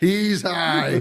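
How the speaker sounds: high, laughing, put-on mock-mourner voice.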